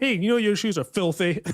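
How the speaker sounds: put-on rough, rude tone. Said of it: "proper rough about it".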